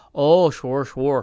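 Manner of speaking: loud, nasal North Dakota accent. Showing the nasal North Dakota accent: nasal North Dakota accent. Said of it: "the nasal, like, Fargo, North Dakota".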